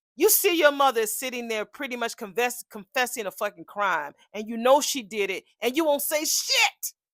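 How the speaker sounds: furious, very loud, angry screaming. Ranting to the audience about Eva, screaming angrily. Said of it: "Excuse me for for screaming".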